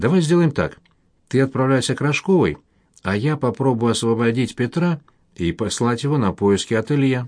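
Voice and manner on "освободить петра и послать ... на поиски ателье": ordinary delivery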